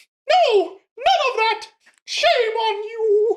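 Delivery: very high, very loud, shrill put-on voice. Repeating a remembered line with a friend, doing the voice every time. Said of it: "I have to do the voice every time".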